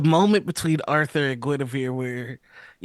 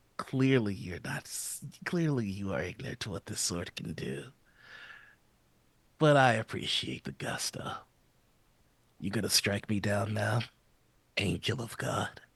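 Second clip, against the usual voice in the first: very soft, barely audible whisper in put-on voice; 5 semitones lower, 10 dB quieter than usual. Voicing a character who taunts an opponent mid-fight: whispering in character. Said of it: "he's just gonna whisper".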